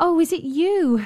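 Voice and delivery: glad, thankful, joyful cry, high and slow. Ingiborg greets Kisser, who has come back with the cat, crying out joyfully. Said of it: "she cried joyfully".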